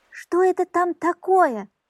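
sudden, high, loud, drawn-out cry. The old woman looks out the little window and cries out. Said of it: "вскрикнула старуха".

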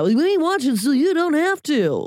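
high, announcing strip-club emcee voice. Mocking how Dan Abrams talks, in a Dan Abrams strip-club voice. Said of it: "talking like a freaking like a dude at a strip club".

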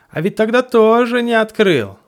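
very high, loud, bossy, commanding scolding tone. In a story read aloud, a small voice scolds its friend; reproachful, commanding. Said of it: "Властный голосок словно укорял своего друга".

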